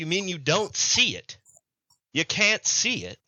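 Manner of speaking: smug know-it-all fish voice, high and swooping. Voicing a fish guy who smirks up at the father: smirking, smug fish guy. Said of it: "he kinda smirks. And he goes".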